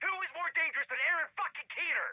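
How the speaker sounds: angry screaming, furious, pitched very high. In a heated argument, told to stop yelling: screaming in anger. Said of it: "if you keep screaming like that?".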